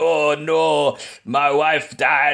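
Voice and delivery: put-on Jamaican-sounding accent. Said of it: "he kinda sounds Jamaican".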